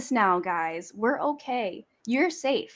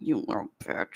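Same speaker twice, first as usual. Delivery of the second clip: hushed whispered mutter under the breath; 7 dB quieter than usual. Imitating the other speaker cursing at the baby: imitating muttering under one's breath. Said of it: "sometimes it's under your breath".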